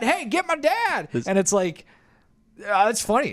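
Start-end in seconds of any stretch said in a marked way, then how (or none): 0.0-1.0 put-on very high, shrill yelling. Retelling how a man tackled in a fight reacted when his dad jumped in, imitating someone yelling. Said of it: "He's just like yelling like".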